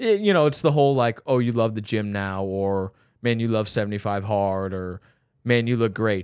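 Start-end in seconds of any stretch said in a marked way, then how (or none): 1.3-6.2 snide, dripping, sarcastic tone. Retelling what people say about going to the gym: imitating a sarcastic compliment. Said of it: "they say it in a sarcastic way".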